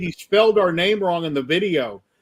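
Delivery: ordinary delivery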